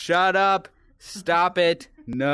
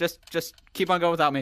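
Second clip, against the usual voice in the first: ordinary talk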